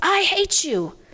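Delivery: piercing, very high-pitched, shrill yell. The speaker retells what little Sally yelled in front of the nurse, retelling a toddler's yell. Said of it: "And she yells".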